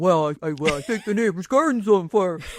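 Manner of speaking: sheepish, mildly embarrassed voice. Retelling how the other speaker quotes her husband: imitating Derek. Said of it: "Usually when you're talking about Derek, you have him saying".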